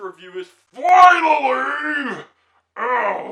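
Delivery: shrill, very loud, high, creepy villain shriek. Reviewing the film, showing how the actor talks in it: Riddler impression. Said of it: "that's like my impression of him".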